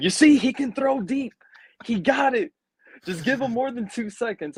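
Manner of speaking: high-pitched, excited yelling to a crowd. Retelling yelling to everyone after their quarterback's deep throw, retelling a yell. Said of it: "I'm yelling around to everyone".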